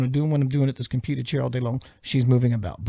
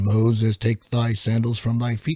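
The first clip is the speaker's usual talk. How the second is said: deep voice dropped low and proclaiming; 3 semitones lower than usual. Demonstrating audiobook character voices, doing the deep voice of God. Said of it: "the Moses burning bush voice, the deep voice".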